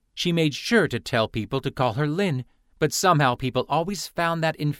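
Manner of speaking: ordinary delivery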